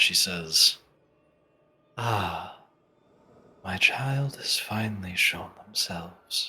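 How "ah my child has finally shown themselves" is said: soft, slow, disembodied woman's voice from all around. Narrating a scene to the players, voicing an unseen speaker in a woman's voice. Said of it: "it seems to be a woman's voice".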